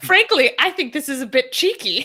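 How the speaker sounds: put-on booming, loud, high, plummy posh British accent. Retelling what a british man said, mimicking his british accent. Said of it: "the way British people thought".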